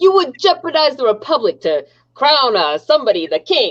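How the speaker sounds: slow, drawn-out, put-on old-time Boston accent. Trying the chat quote again in a boston accent. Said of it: "by Boston".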